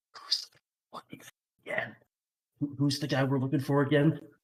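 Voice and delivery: hushed whisper. A player's character leans over to everyone else in the group: really quiet whisper. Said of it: "really quietly whisper".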